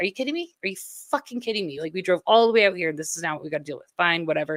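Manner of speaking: exasperated, frustrated, fed-up griping. Retelling arriving as tour buses blocked the view: retelling own frustration. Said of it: "I was so frustrated".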